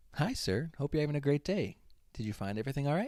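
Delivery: smooth customer-service voice. Acting out a cashier at the register in a cashier customer service voice. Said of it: "in like my cashier customer service voice".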